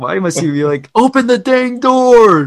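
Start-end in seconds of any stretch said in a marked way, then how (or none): 1.0-2.5 put-on shrill, very high, very loud screaming kid. Imitating a kid heard screaming, maybe over a video game: imitating a kid screaming. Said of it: "Let this kid scream".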